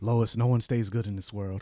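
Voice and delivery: dark, heavy tone. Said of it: "Why you talking like".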